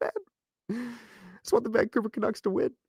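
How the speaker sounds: choked-up voice, very high and soft. A Canucks fan says he just wants them to win, choking up. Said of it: "I'm choking up".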